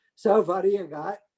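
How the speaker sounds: Yiddish-inflected speech.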